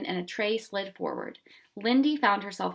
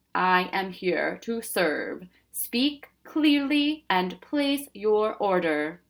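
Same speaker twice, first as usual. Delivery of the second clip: deep, mechanical, machine-like announcing voice. In a story read aloud, a machine speaks after a bell rings, deep mechanical voice. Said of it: "a deep mechanical voice said".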